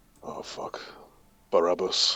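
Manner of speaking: hushed, barely voiced muttered whisper under the breath. Playing a character who spots the enemy leader: whispering under breath. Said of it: "I just whisper under my breath".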